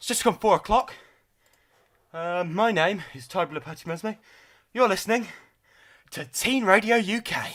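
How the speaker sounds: breathless, out of breath. A teen radio uk host gives the time and name live, out of breath. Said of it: "Catch my breath".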